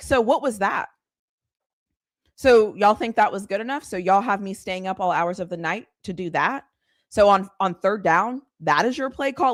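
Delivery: normal talking voice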